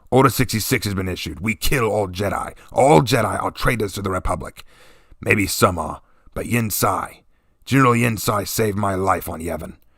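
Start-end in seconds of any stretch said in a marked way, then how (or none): 0.1-4.6 curt, snapped, growling voice. Narrating a story, a sergeant answers a soldier questioning an execution: Sergeant Clash growling. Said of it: "Sergeant [name] asked. / he growled. / he growled".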